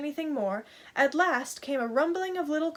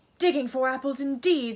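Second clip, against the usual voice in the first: in anger. Narrator reads the rabbit answering Pat's excuse: angry. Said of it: "said the rabbit angrily".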